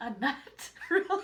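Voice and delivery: talking through laughter. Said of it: "What are you laughing about?".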